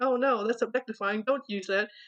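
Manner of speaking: usual speaking voice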